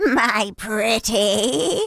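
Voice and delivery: wicked witch character voice, storybook villain style. Comparing a rude agent to the Wicked Witch: Wicked Witch of the West voice. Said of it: "it reminded me of the Wicked Witch".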